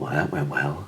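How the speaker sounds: dry, sarcastic tone. Retelling a segment gone wrong, turning to the camera: imitating a sarcastic remark. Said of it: "just sarcastically".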